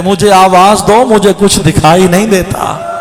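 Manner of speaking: ordinary talk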